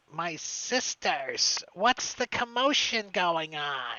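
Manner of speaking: loud, drawn-out witch voice calling from far back. Voicing a witch calling from far back to her sisters: voicing a witch calling out. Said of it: "You hear from way in the back".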